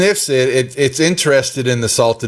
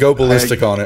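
usual speaking voice

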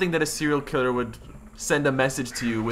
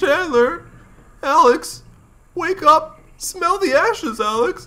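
very high, loud cartoon voice; 5 dB louder than usual. Trying out cartoon impressions with others, the speaker takes a turn: Melman voice. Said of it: "I'm trying to do my Melman voice".

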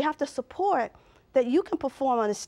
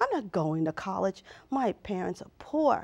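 low, sullen voice loaded with attitude; 4 semitones lower than usual. Retelling a reply to the school nurse: own words with attitude. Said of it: "And I said with an attitude".

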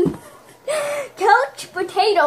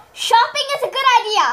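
acted, put-on yell; 5 semitones higher than usual. Reading a phrase aloud to a partner in headphones: yelling. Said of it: "She yells".

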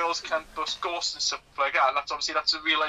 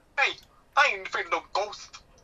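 clumsy, really bad put-on New York accent; 4 semitones higher than usual. Podcast hosts discuss a skit; one quotes a line in a really bad new york accent. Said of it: "with his really bad New York accent".

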